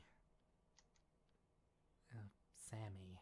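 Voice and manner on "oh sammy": gentler, softer delivery.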